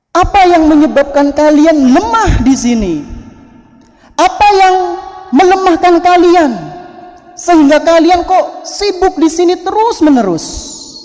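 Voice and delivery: high, very loud scolding shout. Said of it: "Ini teriak keras banget".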